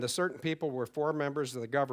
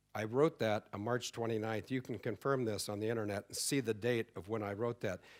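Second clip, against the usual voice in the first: normal talking voice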